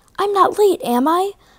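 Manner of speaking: worried, anxious, very high-pitched voice. Percy pulls up behind Henrietta at the gate and asks, anxious. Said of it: "Percy asked anxiously".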